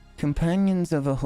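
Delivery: awkward, self-admittedly poor attempt at a grand voice. The speaker tries their best impression of a voice, an attempted voice impression. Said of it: "I'm going to do my best impression".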